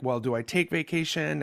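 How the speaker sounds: ordinary talk, nothing marked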